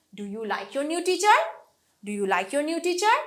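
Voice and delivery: tune rising from low to high on teacher. Showing how to ask yes or no questions: yes-no question, low to high intonation. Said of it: "লো থেকে হাই".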